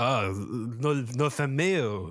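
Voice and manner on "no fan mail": put-on French accent. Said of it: "I can't maintain an accent".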